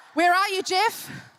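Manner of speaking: plain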